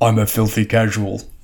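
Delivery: deliberately deepened put-on deep, slow voice. Quoting how Joel would describe himself as a Magic player, Joel impression. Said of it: "I'm trying to have a deep voice like him".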